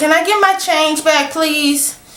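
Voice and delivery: put-on polite tone. Retelling asking her for the change back: retelling a polite request. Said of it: "It's like".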